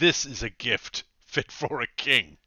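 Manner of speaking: very loud, booming, slow, drawn-out grateful tone. In an actual-play game, the king's spymistress thanks the party for ale: king's spymistress character voice. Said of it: "The party does some more shopping and has an interview with the king's master of spies. / she's / The party does some more shopping and has an interview with the king's master of spies".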